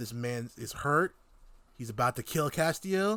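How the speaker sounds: usual speaking voice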